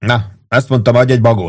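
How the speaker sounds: ordinary delivery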